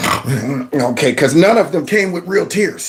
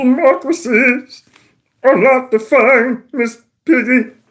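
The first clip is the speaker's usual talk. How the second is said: very high, exaggerated puppet voice; 9 semitones higher than usual. Mocking a clip of a speaker who sounds upset: Kermit the Frog voice. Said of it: "go up in a little bit of a Kermit the Frog".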